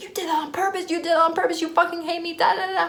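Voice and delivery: high, furious, accusing yell, acted out. Retelling a roommate yelling accusations: imitating someone yelling. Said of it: "she's just yelling at me".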